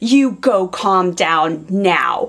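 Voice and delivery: acted, deliberate, very slow, bossy commanding delivery. Retelling how she told her child to calm down: imitating a commanding tone. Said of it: "implemented it with a tone of".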